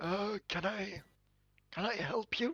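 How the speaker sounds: small, high voice, very slow and drawn way out. Narrating a game scene, the speaker voices a small voice calling out in a shop: Dumbledore-like voice. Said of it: "it sounds like Dumbledore".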